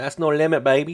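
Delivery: put-on Vietnamese accent. Reacting to price reaching the top of the trading range: put-on Vietnamese accent. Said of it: "It's a Vietnamese accent".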